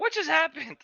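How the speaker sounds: high panicked yelling. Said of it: "I can yell out".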